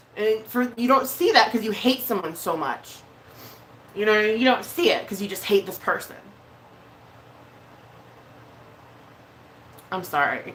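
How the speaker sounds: tearful voice, speaking through tears. Apologizing mid-point without knowing why, crying. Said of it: "I don't know why I'm crying".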